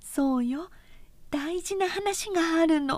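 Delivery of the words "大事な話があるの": hushed whisper, higher. A woman draws a man closer and whispers to him. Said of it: "とお金はささやいた".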